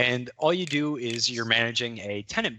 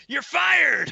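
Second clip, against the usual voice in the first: very high, shrill, loud, commanding shout; 6 dB louder than usual. Now in power and told to fire someone, the speaker does a Vince McMahon impression. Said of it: "Now tell him you're fired".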